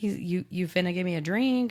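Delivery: plain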